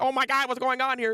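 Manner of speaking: high, whiny, protesting, complaining outcry. Retelling an anime scene where a character panics: imitating a character screaming and complaining. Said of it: "screaming, complaining".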